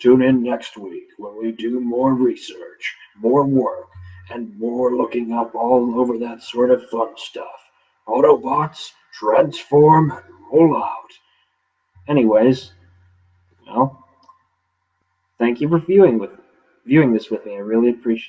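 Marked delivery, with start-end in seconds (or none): 0.0-11.1 slow, deliberate robot voice. Host signing off the tech show and inviting viewers back; Optimus Prime voice. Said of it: "Optimus Prime voice on".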